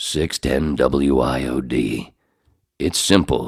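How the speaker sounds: deep, very slow radio announcer voice. Describing a clip's audio after a puppy whimpering, doing Fadek's deep voice. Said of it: "you hear this fucking deep voice".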